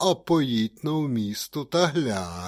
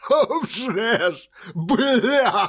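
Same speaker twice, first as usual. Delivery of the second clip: very high, very slow joyful exclaiming cry; 10 semitones higher, 5 dB louder than usual. After counting on his fingers, a man answers the blacksmith, exclaiming joyfully. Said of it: "радісно вигукнув".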